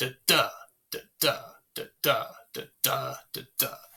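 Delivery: iambic beat: unstressed then stressed "da". Showing an iambic pattern with nonsense syllables: iambic da-DUM, stress on second. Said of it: "unstressed by stressed ... just like this".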